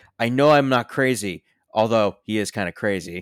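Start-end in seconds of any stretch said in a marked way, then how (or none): 0.2-1.5 a man's raised, pitched-up, desperate tone. Describing a film character desperately looking for a note, imitating a man's desperation. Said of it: "Just the desperation of a man".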